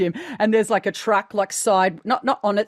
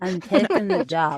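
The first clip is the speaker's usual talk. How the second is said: lazy, very slow, stretched-out American delivery. Trying a first impression of a film line: Jennifer Coolidge voice. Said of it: "we're doing Jennifer Coolidge".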